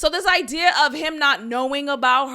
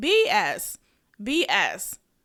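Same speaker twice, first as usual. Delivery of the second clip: usual speaking voice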